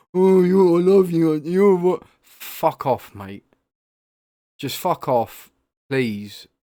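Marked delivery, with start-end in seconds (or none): 0.1-2.0 put-on loud, pitched-up drunk man voice. Imitating a drunk man who puts his arm around you: imitating a drunk man. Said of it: "that one wanker who's had just a few too many".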